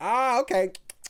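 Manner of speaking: high, loud, caught-out sounding reply.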